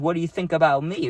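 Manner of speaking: imitated coy, flirty inflection. Retelling what the friend asked about herself: imitating a flirty inflection. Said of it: "she said it with, like, a flirty little, um, inflection in her voice".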